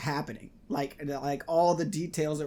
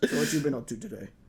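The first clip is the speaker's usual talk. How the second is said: totally chill, casual and relaxed. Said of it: "he's just totally chill about it".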